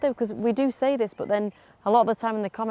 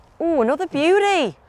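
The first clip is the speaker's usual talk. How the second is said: loud, high, genuinely astonished exclamation; 7 semitones higher, 6 dB louder than usual. Reacting to another golf shot: surprised tone. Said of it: "Why are you sounding so surprised?".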